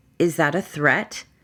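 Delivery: ordinary talk, nothing marked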